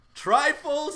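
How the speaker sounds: very high-pitched, loud yell. Retelling a homily heard at the seminary: imitating a priest yelling. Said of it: "He was yelling that".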